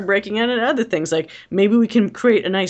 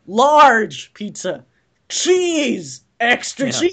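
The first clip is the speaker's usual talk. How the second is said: mock, put-on yelling, higher pitched; 4 semitones higher than usual. Retell how a man gave an example of obnoxious people, imitating someone yelling a pizza order. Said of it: "he's fucking yelling this shit".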